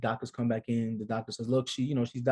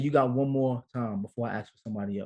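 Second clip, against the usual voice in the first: ordinary talk, nothing marked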